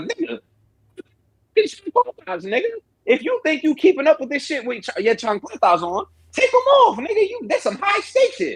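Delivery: acted-out very high, sing-song, swooping heckling voice. Retelling reacting to a chase scene in the theater: retelling yelling at the screen. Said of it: "I'm yelling at the thing like".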